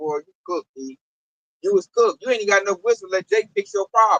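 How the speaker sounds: plain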